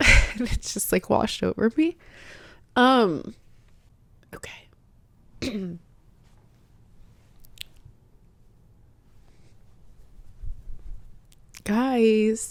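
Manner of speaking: very slow, choked-up, breathy, tearful near whisper. Talking about feeling guided and cared for, tearful and emotional. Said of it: "these are good tears".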